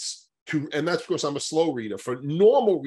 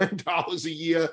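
laughing while speaking, much slower pace. Speaker who then apologizes for laughing: laughing while speaking. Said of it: "I'm sorry that I'm laughing".

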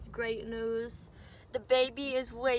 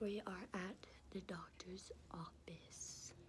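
very quiet, hushed, slow murmur; 5 semitones lower, 17 dB quieter than usual. Announcing the location of the surprise, talking quietly. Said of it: "You're still talking quiet".

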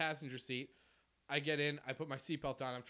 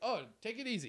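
put-on easygoing, polite, pitched-up Canadian accent; 7 semitones higher than usual. Retelling what you said to people demanding your hat, retelling very canadian politeness. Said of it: "Very Canadian".

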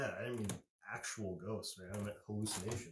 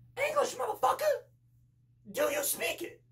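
shrill, booming, swooping outburst, high and swinging; 11 dB louder than usual. After warming up, showing the camera man your impression, Sam Jackson impression. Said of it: "(Impersonaiting Sam Jackson)".

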